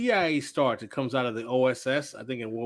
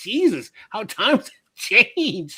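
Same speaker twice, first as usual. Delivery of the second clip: high, slow, mock-shocked scandalized gasp. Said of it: "I'm like".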